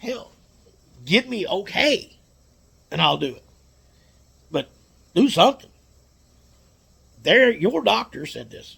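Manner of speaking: high-pitched, agitated, fired-up, worked-up venting. Speaker recounting a dispute over an injury claim, getting worked up. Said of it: "I get a little worked up sometimes".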